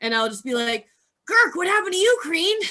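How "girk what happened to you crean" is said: very high, loud shout carrying across a room. A player's character tries shouting again toward someone passing the cages: shouting. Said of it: "I will attempt to shout again".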